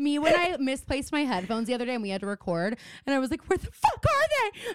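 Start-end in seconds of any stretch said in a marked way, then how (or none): 3.5-4.7 mock, very high, frantic shrieking scream. Recalling misplaced headphones before a recording, the speaker does retelling own screaming. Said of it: "I'm screaming".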